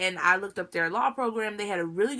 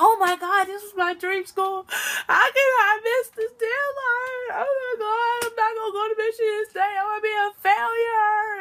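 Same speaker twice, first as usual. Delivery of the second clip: very high, loud sobbing wail through tears; 13 semitones higher, 5 dB louder than usual. Retelling sitting at home after missing a deadline: imitating past self crying. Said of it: "crying, like".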